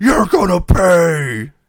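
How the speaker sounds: very high, shrill yell, "pay" dragged long. Recapping a wrestling match, imitating Giant yelling at Hogan. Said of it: "in his best Giant voice, yells to Hogan".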